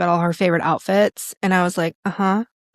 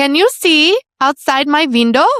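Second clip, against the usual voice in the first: high, loud, exaggerated Swedish accent; 8 semitones higher, 7 dB louder than usual. Retelling what a client in Sweden said: playing up a client's accent. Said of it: "I'm totally playing up her accent".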